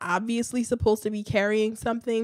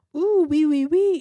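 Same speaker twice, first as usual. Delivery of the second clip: loud, high-pitched, laid-on fake French accent; 7 semitones higher, 5 dB louder than usual. Mimicking a woman who spoke French in stereotypes, in a Pepe Le Pew French accent. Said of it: "the Pepe Le Pew French accent".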